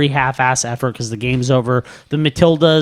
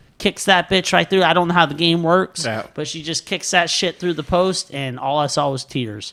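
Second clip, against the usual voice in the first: usual speaking voice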